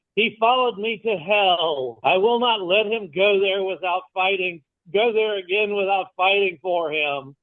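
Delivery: unyielding defiant declaration, hell drawn out. Voicing Sybil vowing to fight for him: Sybil speaking very loudly. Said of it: "The Sybil will very loudly say".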